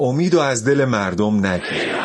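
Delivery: ordinary talk, nothing marked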